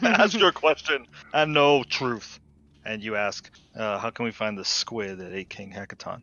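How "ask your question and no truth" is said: grand, resounding, booming, loud delivery. Narrating a game scene to the players as the booming voice answers, booming voice. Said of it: "booming voice says".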